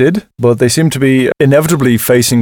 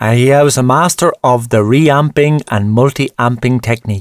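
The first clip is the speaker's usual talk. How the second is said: deliberately dumb-sounding, silly, put-on stupid voice. Describing a producer's recording technique in a stupid voice. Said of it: "Why did I say that in a stupid voice?".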